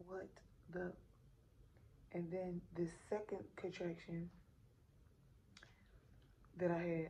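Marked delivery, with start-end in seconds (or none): none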